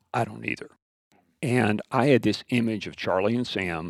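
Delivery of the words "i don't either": put-on soft, quiet voice, quieter still. Retelling a teacher's answer: imitating a soft quiet reply. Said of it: "he said very softly and very quietly".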